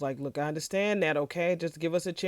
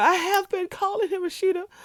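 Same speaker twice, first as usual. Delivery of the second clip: acted sudden exasperated outburst, high, loud yell; 5 dB louder than usual. Retelling a call scene where Bridget snaps at Rashida: imitating Bridget yelling. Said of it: "I didn't mean to yell".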